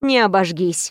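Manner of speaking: usual speaking voice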